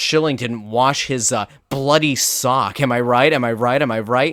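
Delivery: plain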